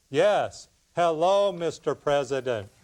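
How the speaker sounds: slow robotic drawl. Pretending to be Al Gore on the phone, slow robotic Al Gore impression. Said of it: "just talk slow, you know, like a robot".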